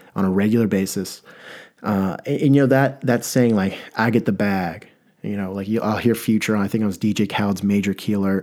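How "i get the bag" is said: usual speaking voice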